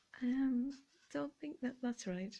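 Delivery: barely-there, quiet, soft murmured remark. Retelling being overcharged at the checkout: imitating saying it very quietly. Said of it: "I just very quietly said".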